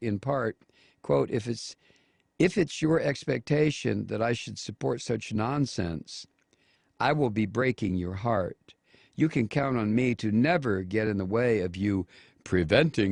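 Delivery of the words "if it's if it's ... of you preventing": ordinary delivery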